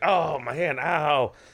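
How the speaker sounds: play-acted, very slow, drawn-out pained cry. Retelling a film scene where a character hurts his hand: imitating a cry of pain. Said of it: "He's like".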